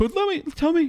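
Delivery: squeaky, very high-pitched voice. Retelling how the show's editor asks him about the shows: imitating his high voice. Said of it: "He has this high voice when he talks to me".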